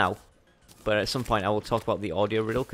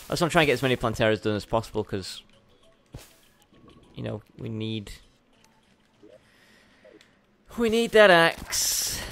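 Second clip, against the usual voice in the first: worn down, beaten, deflated, defeated tone; 4 dB louder than usual. Explaining a wish to beat more planteras for the axe: sounding defeated. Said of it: "I sound so defeated".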